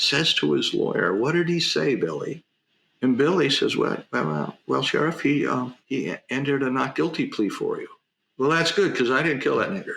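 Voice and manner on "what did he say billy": ordinary delivery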